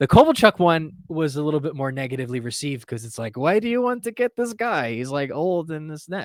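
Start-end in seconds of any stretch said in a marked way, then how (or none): 3.4-6.2 bad fake Russian accent, pitched up. Voicing critics of his article wanting Kovalchuk, terrible Russian accent. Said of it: "with a terrible Russian accent?".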